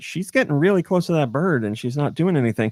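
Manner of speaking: ordinary talk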